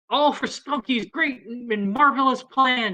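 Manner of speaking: taunting jeer, slow and high-pitched. Speaker voices the figures who jeer the listeners, jeering crowd voice. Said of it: "you hear 'em kinda jeering you".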